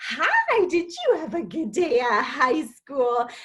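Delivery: put-on high, sing-song baby talk, as if to a toddler. Explaining that parents don't talk to teenagers this way: child-directed speech. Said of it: "we don't talk to our fifteen-year-olds like".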